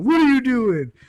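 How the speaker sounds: very high, shrill, demanding yell. Retelling a cop with a flashlight finding them: imitating a cop yelling. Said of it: "he's just yelling at us".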